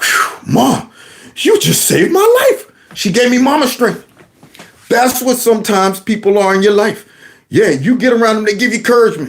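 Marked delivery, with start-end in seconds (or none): 0.0-2.7 slow, high, drawn-out relieved sigh. Retelling turning around in the car seat: imitating his relieved younger self. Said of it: "Turned around in that car seat like".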